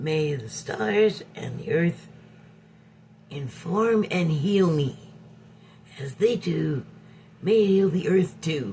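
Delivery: stage whisper. Reading an affirmation aloud because it says to whisper: stage whisper. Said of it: "Sorry about the stage whisper".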